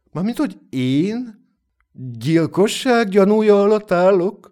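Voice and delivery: taken aback, astonished, high-pitched surprised voice. A man the narrator treats as a murder suspect replies, surprised. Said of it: "Kérdezte meglepődve".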